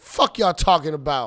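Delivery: thick New York Bronx accent laid on heavy. Showing how thoughtful jokes get some hype, with an extra new york twang. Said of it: "I put an extra New York twang on it".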